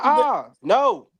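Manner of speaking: irritated, high, loud, annoyed with attitude. Retelling a boy's answer when asked if he had to go potty: imitating an annoyed kid. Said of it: "You got an attitude?".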